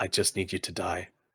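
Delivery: play-acted cool, composed, soft, disturbingly calm menace. Retelling what the boss says while pinning someone down: imitating a calm, collected threat. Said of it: "he says it in this really calm and collected way that's really disturbing".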